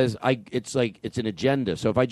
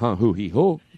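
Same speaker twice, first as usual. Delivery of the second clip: plain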